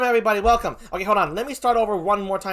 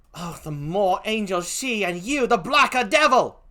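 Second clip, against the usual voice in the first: clumsy, stagey, bad put-on British accent. A speaker reads a line from a play, in a poor British accent. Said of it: "please forgive my poor British accent".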